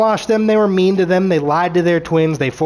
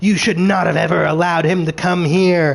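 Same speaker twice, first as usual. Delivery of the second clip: echoing, demon-like voice. Retelling a scene, speaker quotes a disembodied voice in an echoey demonic voice. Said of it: "It's like demonic voice".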